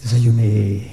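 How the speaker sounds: low, slow, creaky, seductive voice.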